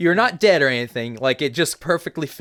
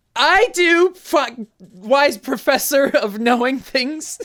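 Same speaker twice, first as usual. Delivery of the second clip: very high, very slow, drawn-out, terrified cry; 10 semitones higher than usual. Voicing a woman fearing for her life: frightened woman yelling. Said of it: "the woman who is fearing for her life with her child yells".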